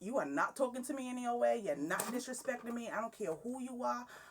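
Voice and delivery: high, defiant tone. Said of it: "'cause I was talking back".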